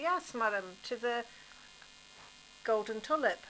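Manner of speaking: usual speaking voice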